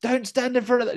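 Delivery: acted-out, very high yelling as loud as possible. Retelling a viewer shouting at the screen: imitating shouting. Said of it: "Jeffrey is shouting".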